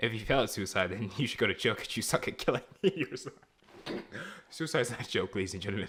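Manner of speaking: talking through laughter. Replying to another speaker in a discussion, laughing while talking. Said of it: "Why are you laughing?".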